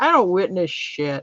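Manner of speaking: calm, cool, totally unruffled tone. Retelling a bystander's reply during an argument: imitating a cool calm reply. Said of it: "cool as a cucumber goes".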